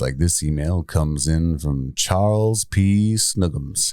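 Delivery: seductive, sultry read. Showing how they read out listener emails, the host reads one in a sultry voice. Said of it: "we do it in a sultry voice".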